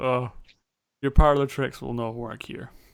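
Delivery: dismissive, scornful, scoffing delivery. Voicing a character who scoffs at a player's trick: scoffing. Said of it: "She scoffs at you and says".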